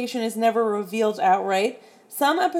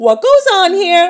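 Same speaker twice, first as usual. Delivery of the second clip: put-on very loud, high New York Puerto Rican accent; 8 semitones higher, 11 dB louder than usual. Acting out a girl's favorite line as sixth grade boys are about to fight, imitating a New York Puerto Rican accent. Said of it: "she's got like a New York, Puerto Rican accent".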